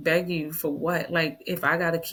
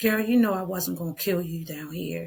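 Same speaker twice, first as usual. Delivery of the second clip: imitated laughing sound. Retelling what he said after the gun failed to fire: imitating someone laughing. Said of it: "and then he laughed like".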